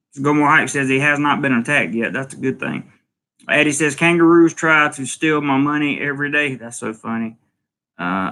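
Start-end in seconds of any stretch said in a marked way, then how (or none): none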